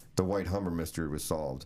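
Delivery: ordinary delivery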